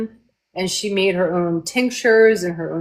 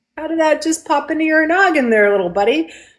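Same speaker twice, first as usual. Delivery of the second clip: put-on overly sweet, forced calm, pitched up; 8 semitones higher than usual. Retelling asking a little buddy how that popped into his noggin: imitating trying not to freak out. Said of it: "I was trying not to freak out".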